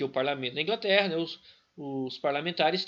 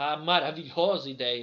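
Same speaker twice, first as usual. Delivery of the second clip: dry, sarcastic, mock-admiring ironic tone; 3 semitones lower than usual. Explaining a parliament decision to listeners, calling it wonderful: sarcastic. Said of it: "eu tô sendo irônico quando eu falo maravilhosa ideia".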